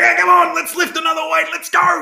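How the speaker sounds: very high, rough, hyped-up coach voice. Saying what another job would need, imitating Colin cheering on a lifter. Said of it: "I'd have to have Colin's job to be like".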